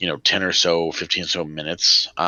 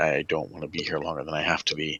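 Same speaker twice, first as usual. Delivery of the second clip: hushed half-whisper under the breath; 7 dB quieter than usual. Voicing a character who confides to the group: half-whispering in character. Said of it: "he kind of whispers this now".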